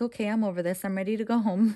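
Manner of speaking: ordinary talk, nothing marked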